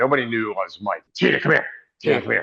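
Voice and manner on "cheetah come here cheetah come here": gruff, rough-edged calling voice. Retelling how Road Warrior Hawk called the speaker over: gruff Road Warrior Hawk voice. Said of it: "with that gruff voice".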